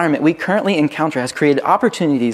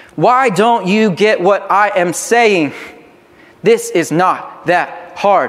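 mock irritated, aggravated parental tone; 3 semitones higher than usual. Describing how some people sound, the speaker demonstrates an aggravated parent tone. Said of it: "Others sound like aggravated parents".

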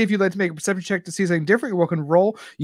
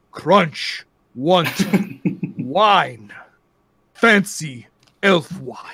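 bugbear monster voice, "wine" drawn out; 3 semitones lower than usual. Game narrator voices Crunch the bugbear at the bar: Crunch the bugbear voice. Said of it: "And Crunch says".

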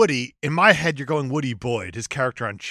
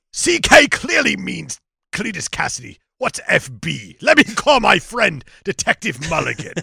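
rasping, rough, creaky put-on voice; 4 semitones higher than usual. Joking about a heart carving clue, voicing Eddie: Venom voice. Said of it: "I'm doing the Venom voice for Eddie".

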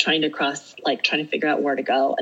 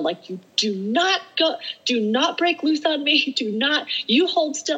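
put-on shrill, very high shouting; 11 semitones higher than usual. Speaker retelling climbing a hill, retelling yelling at the rocks. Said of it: "I'm like yelling at the rocks".

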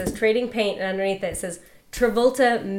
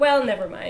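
usual speaking voice

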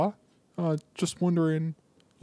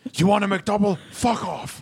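gruff put-on Scottish accent, pitched higher; 5 semitones higher than usual. Imitating a McDonald's commercial: Brian Cox impression. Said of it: "the Brian Cox McDonald's commercials".

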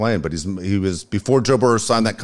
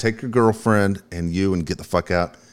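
normal talking voice

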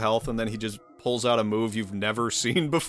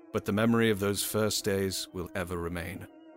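audiobook narrator reading voice, lower and quieter; 4 semitones lower, 5 dB quieter than usual. Speaker reads a passage aloud in an audiobook narrator voice. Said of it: "that was actually a really good voice for that".

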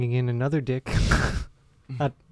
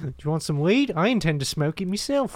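clumsy, poor put-on Australian accent; 3 semitones higher than usual. Joking about weed with friends in a bad australian accent. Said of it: "I'm really bad at Australian accents".

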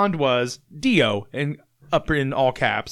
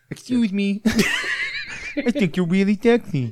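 put-on high, swooping, old cartoon-character voice; 7 semitones higher than usual. Doing the quoted line from the guy after being asked: imitating a guy from a video. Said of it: "That's what he sounds like".

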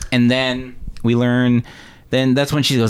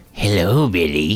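put-on evil, sinister grandpa voice; 5 semitones lower than usual. Retelling a grandpa looking over to greet Billy, in a mock-evil grandpa voice. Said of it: "just the evilest grandpa ever".

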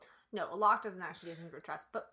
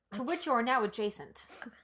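ordinary talk

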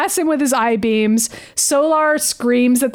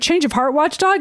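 ordinary talk

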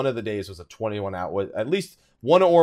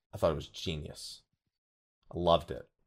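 deadpan, much lower and quieter; 6 semitones lower, 9 dB quieter than usual. Answering a question someone asked about the Woken mechanic, deadpan. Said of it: "This is my deadpan".

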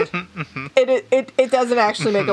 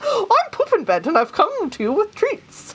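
put-on, high-pitched Scandinavian children's-character voice; 9 semitones higher than usual. Inventing a silly character on the spot, in a Scandinavian children's character voice. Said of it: "It sounds like a Scandinavian children's character".

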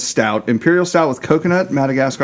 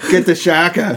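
put-on Boston accent; 4 semitones higher than usual. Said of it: "Talking Boston here".

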